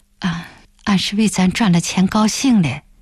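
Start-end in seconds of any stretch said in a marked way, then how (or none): none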